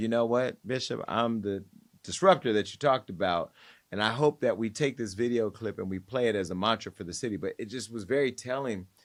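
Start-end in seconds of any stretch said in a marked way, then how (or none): none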